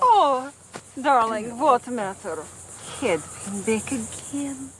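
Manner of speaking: put-on Russian accent. A performer recalls playing Olga in the movie Heartbreakers, Olga's fake Russian accent. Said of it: "who had this fake Russian accent".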